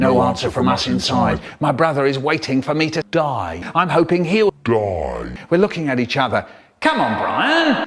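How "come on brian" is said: put-on, a touch annoyed, thinning patience, raised pitch. Retelling his dad calling to him at the door, getting a bit cross. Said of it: "getting a bit cross".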